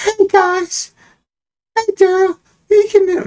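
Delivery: put-on cartoon voice, very high and slow. Imitating a woman the speaker talks about, doing her cartoon voice: cartoonish voice. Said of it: "let me do her cartoon voice".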